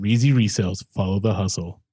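very low, deep movie-trailer announcer voice. A speaker imitates the voiceover that announces a YouTube channel slogan, in movie-trailer voiceover voice. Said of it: "Like the movie voice".

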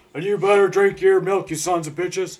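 very loud high holler. Joking about a Got Milk commercial: Stone Cold Steve Austin voice. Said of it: "I'm Stone Cold Steve Austin".

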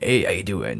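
casual, easy, ordinary normal speaking voice. Explaining a character's two voices, first his ordinary one: imitating Walt's normal voice. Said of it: "Walt has, like, his own voice".

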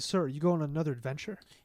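normal talking voice

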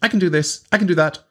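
high, boastful show-off voice.

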